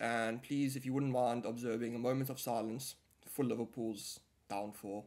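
ordinary delivery

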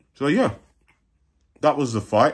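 speaking with food in mouth. Wrapping up commentary on a fight, talking while eating. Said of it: "sorry, I'm eating".

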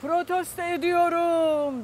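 sudden loud, high shout, echoing. Retelling standing up in a packed hall to protest, re-enacting a shout. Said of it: "Protesto ediyorum diye bir bağırdım".

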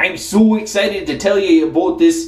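put-on Canadian accent.

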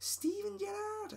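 poor Scouse accent, pitched very high. Announcing the final member of the team, in a poor scouse accent. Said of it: "my poor attempt of a Scouse accent".

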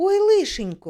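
high, loud, frightened cry of alarm. Warned that a car is bringing a guest, a girl cries out in fright. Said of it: "злякано похватилася Катря".

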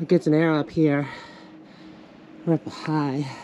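winded, breathless speech. Climbing high up a trail with a companion, out of breath. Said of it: "I am out of breath".

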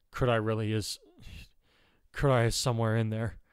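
ordinary talk

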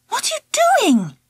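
shocked, startled, very high-pitched, fast burst. The narrator sees Angela lift the lid of the teacher's desk, shocked voice. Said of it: "I said in a shocked voice".

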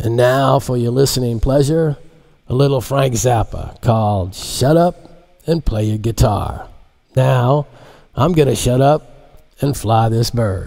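put-on old FM radio disc jockey voice. Narrator reads the pilot speaking over everyone's headsets, like an old fm disc jockey. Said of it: "he sounded like an old FM disc jockey".

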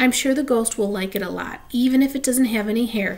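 plain reading voice

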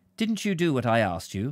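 frosty, icy, cold, unwarm tone. Mrs. josser turns to mr. josser and speaks first; cold. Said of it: "She said coldly".

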